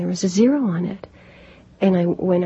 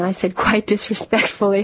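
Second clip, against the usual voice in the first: ordinary talk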